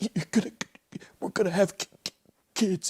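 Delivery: put-on freezing shiver. Retelling a film scene, imitating a character talking while freezing: imitating freezing shivering speech. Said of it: "And he's all freezing".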